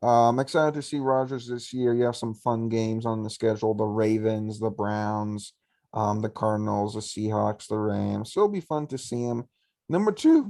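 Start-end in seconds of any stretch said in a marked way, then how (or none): 9.9-10.5 voice cracks very high and loud on two. Starting the next pick in a football ranking, voice cracking. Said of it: "I don't know what happened with the voice crack there".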